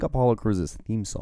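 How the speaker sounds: ordinary talk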